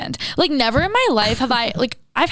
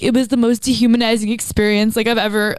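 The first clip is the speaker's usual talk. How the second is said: ordinary talk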